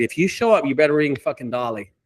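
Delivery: plain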